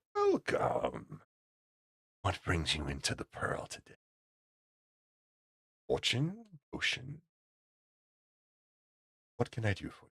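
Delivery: soft, sing-song, sickeningly sweet voice. Narrator voicing a shop owner welcoming you into her shop, sickeningly sweet voice. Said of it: "very sickeningly sweet voice".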